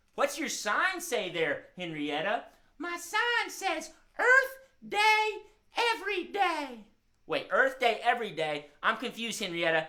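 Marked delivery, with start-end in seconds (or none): 2.8-6.8 very high, slow, drawn-out hen voice. Voicing a hen puppet greeting friends: Henrietta the hen voice. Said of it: "Henrietta the hen".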